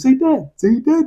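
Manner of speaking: goofy, dim-witted, high, slow silly coaxing. Retelling how Tim coaxed Alfie to say Dad, doing a stupid coaxing voice. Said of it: "He's like really stupid with it".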